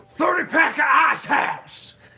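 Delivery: shrill full-lung bellow, very loud and high. Recounting what a man beside him yelled every time: retelling a shout at top of lungs. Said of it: "at the top of his lungs".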